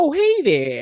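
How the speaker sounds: squeaky, very high cartoonish character voice. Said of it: "and like doing that voice".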